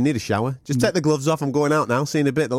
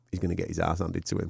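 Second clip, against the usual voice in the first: put-on under-breath mutter, much quieter, lower; 8 semitones lower, 10 dB quieter than usual. Retelling what he muttered on a train about a fight, under his breath. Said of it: "just under my breath".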